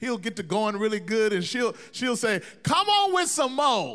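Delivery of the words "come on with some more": mock yell, higher pitch and louder. Speaker recalls an aunt calling out to the preacher, imitating Aunt Vicky yelling. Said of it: "She's yelling out".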